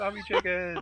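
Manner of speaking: high, excited squeal with laughter.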